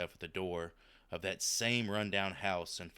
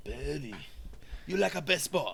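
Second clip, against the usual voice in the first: much higher, mock Japanese accent; 8 semitones higher, 4 dB louder than usual. Taking up the suggestion to talk like Hattori Hanzo: Hattori Hanzo impression. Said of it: "Your Japanese is very good".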